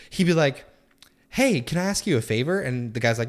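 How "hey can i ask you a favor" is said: mock crafty, scheming, sly tone, pitched up. Retelling how the microwave asked the man a favor: imitating a cunning voice. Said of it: "extremely, like, cunning".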